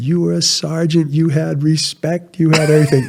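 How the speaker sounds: put-on Portuguese accent laid on thick. A speaker quotes his grandfather replying to him; thick portuguese accent. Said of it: "He had a really thick Portuguese accent".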